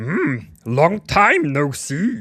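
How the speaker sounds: high, very loud swooping voice, belted out. Greeting the others at the start of a stream: Yoda voice. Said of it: "when that Yoda voice was gonna come out".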